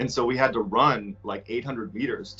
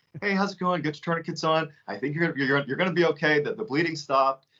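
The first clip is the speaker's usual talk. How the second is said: calm voice, higher pitch; 5 semitones higher than usual. Retelling a medic's words in the middle of a gunfight: imitating someone calm. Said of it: "And he's so calm".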